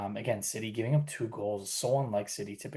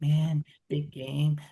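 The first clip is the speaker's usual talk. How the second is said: play-acted droopy, limp, half-hearted, low-energy, pitched up; 6 semitones higher, 7 dB louder than usual. Mocking someone hunched over, demanding more energy from them: mock low-energy voice. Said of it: "You're like hunched over and like".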